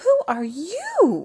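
high-pitched gasp with "you" stretched out long. Reading a story aloud, a character faces an old lady holding a pistol, gasped. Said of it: "gasped Cindy Ellen".

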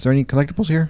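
breaking voice, cracking mid-line. Talking to viewers while playing a game, voice cracking. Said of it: "My voice just cracked".

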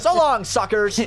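very high, loud, cringe-worthy voice. Imitating the game's ninja the first time he speaks: embarrassing ninja voice. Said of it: "The ninja just said that the first time he speaks".

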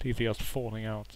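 ordinary delivery

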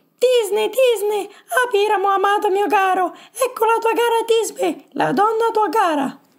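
ridiculous, tiny, very high falsetto. Acting behind a mask, a player also takes the role of Tisbe: implausible little Tisbe voice. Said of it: "Vi tiro fuori una vocina inverosimile".

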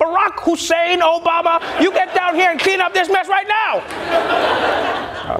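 stern, very high-pitched, slow scolding tone. Imitating a mom calling her son by full name, mock-scolding like a mom. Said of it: "It just sounds like you're his mom".

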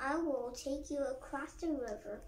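plain

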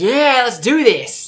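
high, booming, slow, drawn-out creature cry. Playing a game and voicing the Sand Seal: Sand Seal voice. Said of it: "Even the Sand Steel's like".

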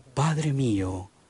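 gentle, humble, earnest pleading.

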